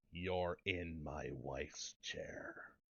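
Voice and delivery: very low, very quiet, deep, dark, slow voice. Retelling what he said to a woman, the speaker uses the deepest, darkest voice. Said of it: "in the deepest, darkest voice".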